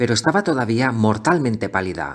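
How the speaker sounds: ordinary delivery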